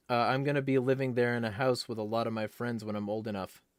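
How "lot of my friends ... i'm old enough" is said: ordinary talk, nothing marked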